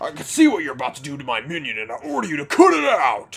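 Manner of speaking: big, loud, booming royal monster bellow. Reading game dialogue aloud while playing, in Bowser's voice. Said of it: "that's Bowser, sorry".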